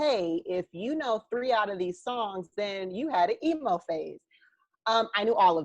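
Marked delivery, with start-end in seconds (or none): none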